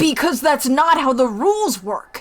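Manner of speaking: shouting. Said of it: "Why are you yelling at me?".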